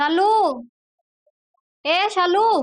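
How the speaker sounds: high, loud calling shout. In a drama, a woman calls out to her husband's sister: shouting. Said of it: "क्यों चिल्ला रही हो?".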